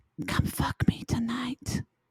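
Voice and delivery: breathy, soft whisper, close up, as into ear. In an improvised dating scene, whispering into the date's ear. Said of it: "I'm whispering in your ear".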